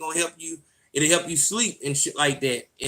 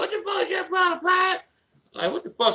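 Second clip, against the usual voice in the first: acted-out yell, much higher. Recounting a confrontation, the speaker acts out a man yelling in his face. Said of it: "come in my face fucking yelling".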